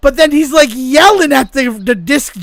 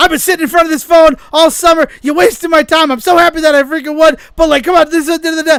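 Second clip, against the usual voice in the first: put-on, mildly exasperated, half-shouted rant; 4 semitones higher than usual. Retell how a caller who waited on the phone went off at him, imitating someone yelling. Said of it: "he's yelling at him like".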